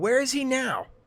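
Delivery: shouted out, yelled, voice very high. Retelling a game scene, own angry question to a character: retelling own yell. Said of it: "and I yell out".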